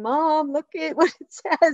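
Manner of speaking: put-on high, crying child's voice, tearful. A parent retells what their son said about a school note, imitating a crying child. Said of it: "my kid's crying".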